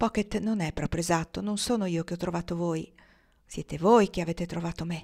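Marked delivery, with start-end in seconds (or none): none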